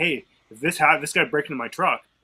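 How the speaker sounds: normal talking voice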